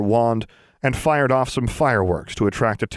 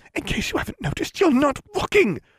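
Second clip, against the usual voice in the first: very high, furious hiss with swooping pitch. Narrator reading the girl's line to him: angry hiss. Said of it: "she hissed angrily".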